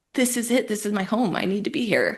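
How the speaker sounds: acted sobbing speech. Retelling what was said to husband and son at a rooftop bar, retelling own sobbing words. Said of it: "I'm like sobbing over French fries".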